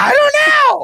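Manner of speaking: very high, shrill, very loud, frantic scream. Retelling a driver going the wrong way, imitating a woman screaming. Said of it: "She's just screaming".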